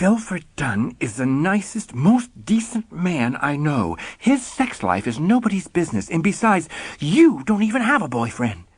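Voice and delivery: through clenched teeth. Reading a scene where the narrator defends a friend: through clenched teeth. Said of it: "You say this through clenched teeth".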